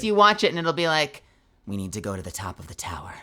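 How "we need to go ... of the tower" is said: very low, grave, serious, flat monotone delivery. Demonstrating the delivery used for a character, low serious monotone. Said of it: "Like that kind of a voice".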